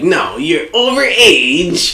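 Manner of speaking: high, stuck-up rich snob voice. Complaining that kids get fined for trick-or-treating, imitating rich assholes. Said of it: "these rich assholes be like".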